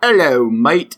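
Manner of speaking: put-on Australian accent. Meaning to read a police quote in a british accent, the speaker slips into a put-on australian accent. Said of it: "No, that was Australian".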